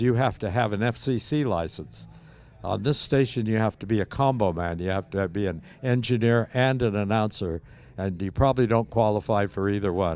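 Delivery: plain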